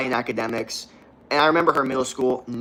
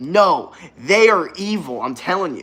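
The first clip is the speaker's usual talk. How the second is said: angry, raised, very slow, insistent voice; 6 semitones higher, 4 dB louder than usual. Retelling own words as a child about bullies: imitating own angry past self. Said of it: "I remember being so mad".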